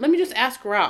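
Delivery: ordinary talk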